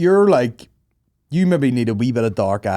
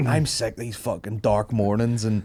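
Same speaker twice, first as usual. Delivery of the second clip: usual speaking voice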